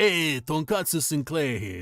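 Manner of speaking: put-on New York Brooklyn accent. Describing a content creator with an anime avatar, doing Tonkatsu Sinclair's Brooklyn-Bronx voice. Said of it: "It's like you know from Brooklyn, Bronx".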